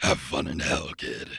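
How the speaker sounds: loud demonic voice. Performer playing the dealmaker switches for the last line into demon voice. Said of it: "I love transitioning into that voice at the last line".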